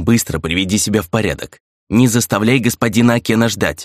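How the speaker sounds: ordinary delivery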